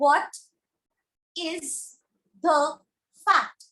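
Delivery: WHAT and FACT stressed, words separated by pauses. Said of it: "I'm framing a question".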